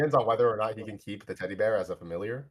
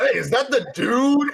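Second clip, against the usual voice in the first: over-the-top, very high, loud, hammed-up voice; 8 dB louder than usual. Narrating a scene and voicing a character, over-exaggerated Mushu voice. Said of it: "Mushu says with like an over exaggerated voice".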